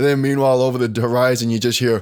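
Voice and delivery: ordinary talk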